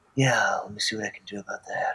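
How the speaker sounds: very hushed, quiet, distinct in-character voice. Retelling how he would answer a question, in his character's voice. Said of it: "or like in the character's voice".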